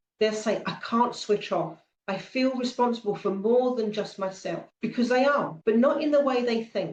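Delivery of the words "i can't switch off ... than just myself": ordinary talk, nothing marked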